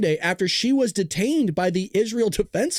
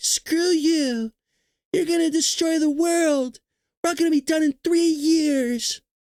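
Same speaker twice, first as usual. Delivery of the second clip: put-on screaming girl voice, pitched higher; 8 semitones higher than usual. Mocking how Greta Thunberg screams at everybody: screaming Greta Thunberg impression. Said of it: "Why she's screaming at everybody".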